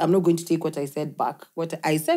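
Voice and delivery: normal talking voice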